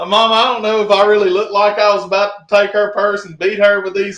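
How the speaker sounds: high-pitched, loud voice, laughing while speaking.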